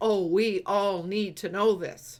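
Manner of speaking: normal talking voice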